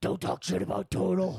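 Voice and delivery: weird rough raspy voice, pitched a bit high. Quoting a remembered meme line in a weird Batman voice. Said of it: "a weird Batman voice".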